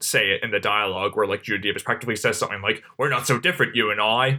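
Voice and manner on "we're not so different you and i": put-on Australian accent. Quoting a line of dialogue in a put-on Australian accent. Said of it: "That was my Australian accent".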